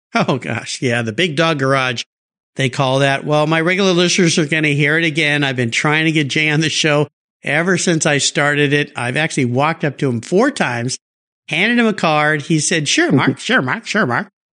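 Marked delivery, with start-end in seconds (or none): 12.9-14.3 rough, shaky, unpolished attempt at a put-on voice. Retelling his answer when handed a card: not very good Jay Leno impression. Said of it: "can't do his, his impression very well, but that's how he says it".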